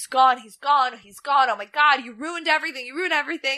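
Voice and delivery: acted-out frantic meltdown. Retelling a man discovering someone is gone; retelling someone losing it. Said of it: "And Eddie loses it".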